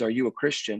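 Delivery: whispered speech. Retelling what a man peeking around the corner asked, retelling a whisper.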